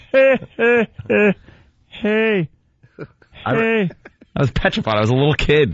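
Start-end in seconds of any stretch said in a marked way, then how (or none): 0.1-3.9 slow, very high-pitched, drawn-out laughing "hey-hey". Recalling a man he watched as a little kid, the speaker is imitating his hey-hey laugh. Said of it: "He used to laugh like that".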